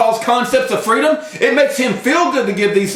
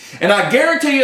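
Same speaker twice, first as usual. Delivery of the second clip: ordinary talk, nothing marked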